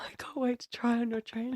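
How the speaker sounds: soft, unvoiced whisper.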